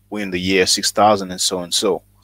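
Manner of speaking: normal talking voice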